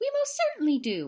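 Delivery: small, high, piped-up tiny voice. Narrator reading the tiny voice answering Horton, in a piping voice. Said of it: "piped the voice".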